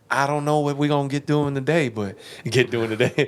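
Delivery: light, real country Ohio way of talking. Showing what Rob Dyrdek sounds like: Rob Dyrdek impression. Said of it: "this is what Rob Dyrdek sounds like".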